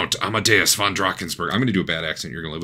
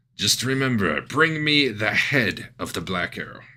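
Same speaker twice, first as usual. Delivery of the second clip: put-on, made-up French accent, laid on; 3 semitones higher than usual. As a mustache-twirling character handing over a platter, pseudo French accent. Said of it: "It's a pseudo French accent".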